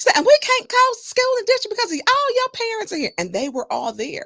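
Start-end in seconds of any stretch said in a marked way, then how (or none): 0.1-3.1 put-on high-pitched, crying Southern accent. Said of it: "she had a very deep Southern accent".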